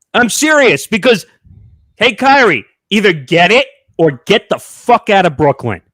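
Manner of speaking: loud, high, heated, angry rant. Speaker ranting about Kyrie, angry. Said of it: "I know I'm angry today".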